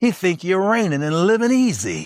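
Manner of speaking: mocking sarcasm.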